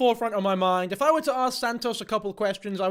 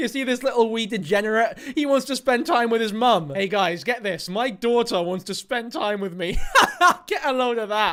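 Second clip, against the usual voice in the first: mock giddy, gloating laughter like a child. Mocking a mum who laughs that her child wants to visit: mocking giddy laughing mum. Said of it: "laughing giddily like a fucking child at prom".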